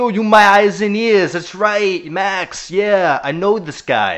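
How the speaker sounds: put-on thick New York accent, loud and drawn out. Imitating an actor's line from a movie scene: Andrew Garfield's thick New York accent. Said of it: "puts on a really thick New York accent".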